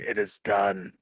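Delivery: low, unearthly, otherworldly creature voice. Game master voices an unseen creature heard by a player, otherworldly creature whisper. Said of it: "the otherworldly whisper of a creature saying".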